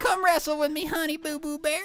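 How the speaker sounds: character voice pitched very high. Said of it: "the voice of the uncle".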